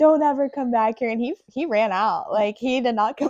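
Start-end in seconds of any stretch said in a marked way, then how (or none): 0.0-1.1 loud, forceful screaming. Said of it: "freaking just screamed at him".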